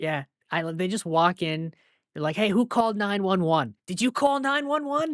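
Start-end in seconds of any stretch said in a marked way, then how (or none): 2.4-5.2 put-on strongest Boston accent, pitched up. Describing cops walking in, imitating them with the strongest Boston-accent cop voice. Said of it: "strongest Boston accent cop".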